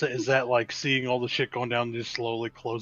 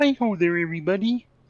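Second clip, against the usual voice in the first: put-on voice, pitch way up, squeaky and loud; 7 semitones higher, 5 dB louder than usual. Doing an annoying, pitched-up voice impression: Kermit voice. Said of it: "make the most annoying voice ever and then pitch it up higher".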